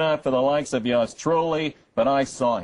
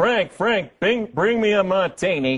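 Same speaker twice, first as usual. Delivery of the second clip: put-on, pitched-up, drawn-out background calling yell; 5 semitones higher than usual. Retelling what Kathie Lee yelled during a voiceover: imitating Kathie Lee yelling. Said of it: "she's yelling in the background".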